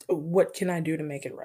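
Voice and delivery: normal talking voice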